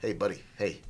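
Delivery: low, offhand, nonchalant guy-down-the-street voice. Describing how the bug creature talked to them; casual street-dude voice. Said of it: "it talks like that, like some dude down the street".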